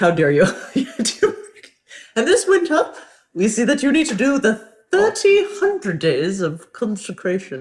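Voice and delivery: vague, unplaced, high-pitched fake British accent. Speaker acts out someone's message in a put-on british accent. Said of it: "someone british i don't know whose voice".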